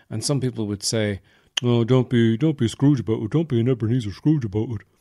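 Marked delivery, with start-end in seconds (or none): 1.6-4.8 put-on Offaly accent. Acting out someone who says not to be a Scrooge: Offaly accent. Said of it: "I get the accent".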